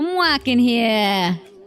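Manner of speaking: fake New York Bronx accent. Taking a turn at an accent after another speaker tried, put-on Bronx accent. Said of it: "Can I try?".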